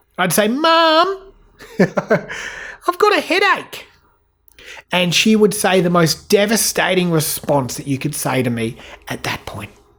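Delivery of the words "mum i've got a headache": put-on very high, very slow, drawn-out child voice. Retelling a childhood complaint to mum: imitating himself as a child. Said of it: "It would sound like this".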